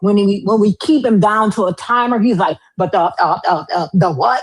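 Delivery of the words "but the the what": stumbling, halting stutter with hesitant fillers. Mocking a caller who hesitates under a timer: imitating someone stuttering. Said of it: "You cannot be stuttering".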